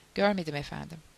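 ordinary delivery

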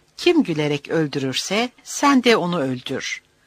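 ordinary delivery

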